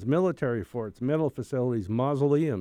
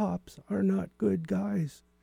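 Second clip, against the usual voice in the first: put-on ghostly voice, high, slow, creaky, rough-edged; 6 semitones higher, 4 dB quieter than usual. Retelling a voice heard on a recording: imitating a ghost voice. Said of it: "I'm learning to imitate ghosts".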